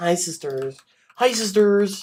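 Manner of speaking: slow, lingering, stretched-out delivery on each word. Trying out a voice while talking about vocal practice: James Charles voice. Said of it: "the James Charles voice".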